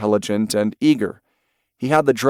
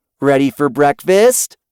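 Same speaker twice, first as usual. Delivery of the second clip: voice nudged slightly higher; 4 semitones higher, 5 dB louder than usual. Narrator giving Danny calling Scout to breakfast, in a slightly higher voice. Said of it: "She tried a slightly higher voice".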